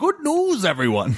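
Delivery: very high, grand proclaiming voice. Opening the podcast with a catchphrase: Farnsworth voice. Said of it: "You just went right into Farnsworth there".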